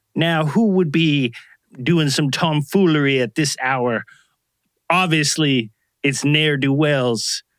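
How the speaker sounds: put-on old-fashioned, drawn-out southern dandy gentleman drawl. Imitating Mister Griffith checking his pocket watch late at night: Southern dandy voice. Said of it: "everybody in Iowa ... sounded like a th-, a Southern dandy".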